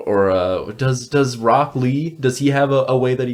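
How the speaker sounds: plain reading voice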